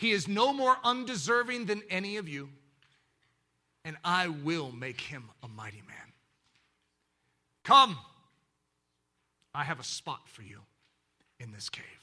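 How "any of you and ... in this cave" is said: tender, gentle, loving voice. Voicing the king welcoming a weak newcomer: very soft, loving tone. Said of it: "his voice changes into a very soft, loving tone".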